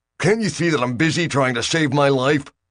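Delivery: irritable, snappish snarl. Reading a story, a man on a collapsing ladder is pestered: snarled testily. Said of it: "Bill snarled testily".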